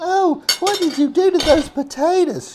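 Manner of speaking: shrill, very high-pitched, loud voice. Retelling what his wife said about the potatoes: imitating Janice's voice. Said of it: "she talks in that voice".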